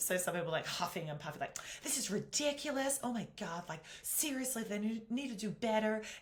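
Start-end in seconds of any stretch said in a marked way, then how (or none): 1.8-6.0 really poor put-on American accent, high. Imitating people at a security gate: really poor American accent. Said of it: "you'll have to excuse the really poor American accent".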